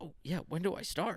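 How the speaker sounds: timid, reserved, unsure, high crackling voice. Imitating job applicants asking when they start: imitating a reserved, crackling voice. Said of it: "crackling in the voice".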